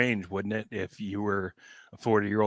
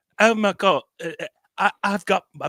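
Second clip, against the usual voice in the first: very high, earnest, loud put-on British accent; 10 semitones higher, 6 dB louder than usual. Imagining people abroad speaking english sincerely, put-on british accent. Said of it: "why did I do British?".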